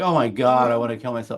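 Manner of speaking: put-on flippant, sarcastic, casual joking tone. Imitating a young person's offhand sarcastic comment: imitating a flippant sarcastic remark. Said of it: "you're young and hip and you're like".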